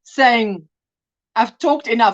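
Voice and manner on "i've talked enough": ordinary delivery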